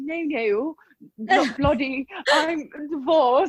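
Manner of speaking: bad put-on British accent. Retelling a man's answer after she asked if he was married, shitty British accent. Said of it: "Cue [name]'s accent".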